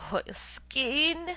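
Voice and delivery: with a groan. Narrator reads Semyon Semyonovitch's line in a story, groaning. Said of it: "groaned Semyon Semyonovitch".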